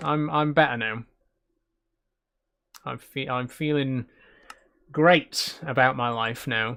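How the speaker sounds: sarcastic, put-on, sarcasm-laced tone. Joking after telling of a cancelled trip: put-on sarcastic tone. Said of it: "that sounded sarcastic".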